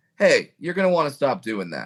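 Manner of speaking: mock gentle, almost nice, sweet calming sing-song. Imitating a bouncer quietly warning hecklers: imitating a calm sweet bouncer warning. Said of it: "in, like, a calming way".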